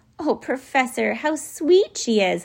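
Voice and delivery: high, cried-out, lingering, drawn-out voice. Seeing beady eyes peer out of the feathers, someone cries out to the professor. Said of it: "Lindy cried".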